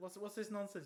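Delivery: scoffing, scornful, fussy tone, acted out mockingly. Retelling own past words while mocking someone's parenting style: retelling a mocking remark. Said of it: "I was mocking, uh, mocking his parenting style".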